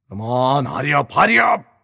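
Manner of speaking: growling voice. A man presses another man struggling to pull out his wallet, growling. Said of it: "black पुन्हा गुरगुरला".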